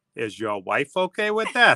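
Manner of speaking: put-on New Jersey accent, low pitch. Retelling Maddie's reply to a dinner invitation, Maddie's New Jersey voice. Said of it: "in her New Jersey voice".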